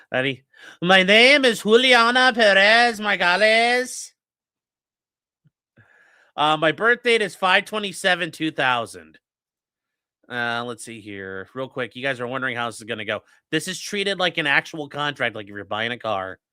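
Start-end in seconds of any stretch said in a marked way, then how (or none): 0.8-9.1 loud, slow put-on Spanish accent. Reading aloud a plea form for viewers: put-on spanish accent. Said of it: "we'll do it with the accents".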